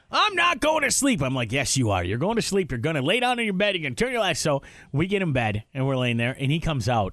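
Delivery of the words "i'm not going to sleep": mock, very high, shrill, upset yelling. Recounting a bedtime standoff, quoting what he yelled: retelling his yelling. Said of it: "and he's yelling".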